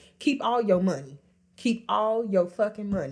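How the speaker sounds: ordinary delivery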